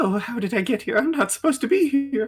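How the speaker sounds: very high, rushed, pitiful panic, rising. A voice behind a door talking to themselves, in a pitiful, panicked voice. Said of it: "Just like panic in the voice".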